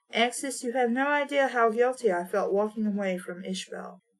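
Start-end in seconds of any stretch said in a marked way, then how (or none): none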